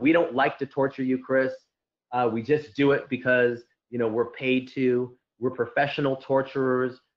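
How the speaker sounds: ordinary talk, nothing marked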